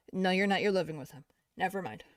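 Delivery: ordinary delivery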